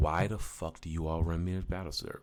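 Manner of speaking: plain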